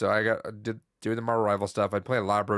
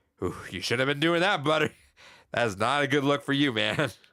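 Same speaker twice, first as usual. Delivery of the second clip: dry, mocking sarcastic quip, pitched up; 5 semitones higher than usual. Retelling how a guy reacted while the place got cleaned up, imitating dry sarcasm. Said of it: "get more dry and sarcastic".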